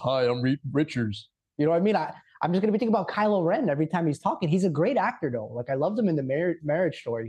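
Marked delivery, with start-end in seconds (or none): 0.0-1.3 deep, heavy, slow voice from the chest. Reacting to casting news, the speaker imitates the actor in a deep Adam Driver voice. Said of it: "He's got like that deep voice".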